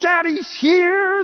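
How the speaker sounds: excited, high-pitched shouting. Retelling coming home to children running up: retelling own shout. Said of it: "and I would shout".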